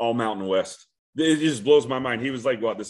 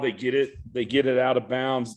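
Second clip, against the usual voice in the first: ordinary delivery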